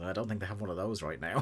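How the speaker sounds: muttered under the breath. Retelling a line said under the breath, muttering like Tony Schiavone. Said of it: "Tony under his breath just goes".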